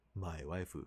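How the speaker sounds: put-on Japanese accent. Retelling an anime scene, quoting a teacher's line: imitating a Japanese accent. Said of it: "in English, but in a Japanese accent".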